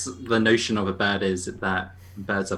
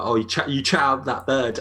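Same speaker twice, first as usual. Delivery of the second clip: usual speaking voice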